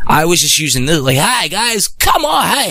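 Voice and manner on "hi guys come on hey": very high, slow put-on salesman voice. Retelling how he sold products using a learned salesman voice. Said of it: "this is how I used to talk. All bullshit aside, I literally made this voice to sell".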